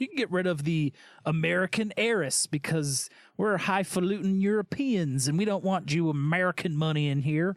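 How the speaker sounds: sudden put-on Southern American accent. Voicing Europeans turning away an American heiress, in a Southern accent. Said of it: "I just went into a Southern accent".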